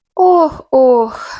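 sighing heavily. The kitten, questioned by the narrator, answers; heavy sigh. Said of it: "важко зітхнув кицик".

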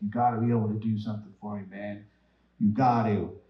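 desperate, hard-pleading, begging voice. Retelling how the guy pleaded during the walkthrough: imitating someone begging. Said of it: "the guy was, like, begging me".

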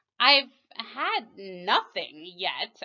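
affronted, put-out, offended, slow reply. A girl replies to an offer of more tea, offended tone. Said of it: "Alice replied in an offended tone".

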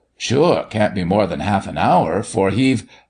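ordinary delivery

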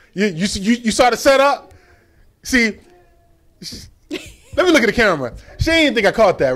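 voice climbing high and loud, worked up. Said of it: "Why your voice getting high?".

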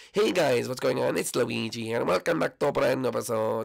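nasal, unexcited character voice. Demonstrating a video intro, the speaker does a nasally Luigi voice. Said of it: "It's more a nasally voice of".

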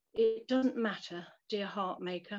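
ordinary delivery

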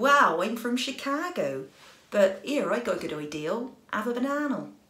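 accent from Bristol. Imagining Cary Grant speaking naturally: Cary Grant with Bristol accent. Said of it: "He's from Bristol, isn't he? From Bristol, in the West Country".

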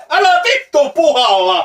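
yelling in pain.

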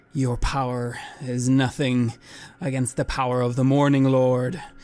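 firm, commanding, authoritative voice. Tabletop player, in character, answering the Count after healing: commanding voice. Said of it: "I say with a commanding voice".

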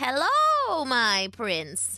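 croaking witch voice, swooping. Narrator reading a fairy tale, the witch greeting the prince, croaking witch voice. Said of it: "the witch croaked".

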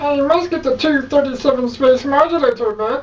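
cartoonish spaceman character voice. Asked to try the line again, redoing it: Marvin the Martian impression. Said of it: "do an impersonation of Marvin the Martian".

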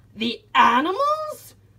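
outraged, high-pitched loud cry. A man in the water yells back at the captain's plan, yelled. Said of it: "yelled Mr. Payne".

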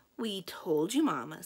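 slow, smug, self-satisfied, knowing tone. Beatrice answers her mother, smirking.

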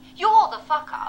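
loud, high, furious outburst.

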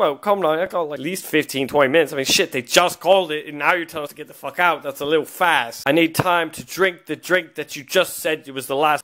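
ordinary delivery

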